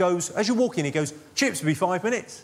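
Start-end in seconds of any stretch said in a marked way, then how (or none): 1.3-2.4 mock, relentlessly chipper, all too chirpy delivery. Describing a fish and chip shop, imitating the guy there in an overly chirpy voice. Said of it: "in an all too chirpy voice".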